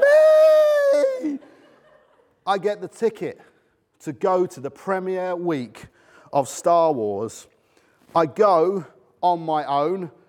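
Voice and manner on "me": shrill, very high, stretched-out, drawn-out shriek. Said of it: "I screamed so shrill and so loud".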